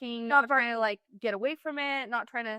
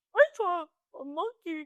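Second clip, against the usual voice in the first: put-on high, slow dog voice; 7 semitones higher than usual. Joking about what the dog would answer: put-on dog voice. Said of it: "The dog's like".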